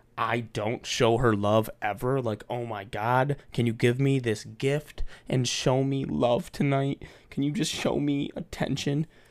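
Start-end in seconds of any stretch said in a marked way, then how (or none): 2.5-9.1 mock begging, put-on pleading tone. Speaker imitating a woman asking him for love, in a mock begging voice. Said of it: "Like that begging type of voice".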